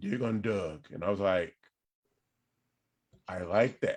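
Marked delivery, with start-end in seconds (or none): 0.0-0.9 deep, burly put-on voice, quieter. Telling how a man suggested the name for the show, deep burly voice. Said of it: "he has this like deep burly voice".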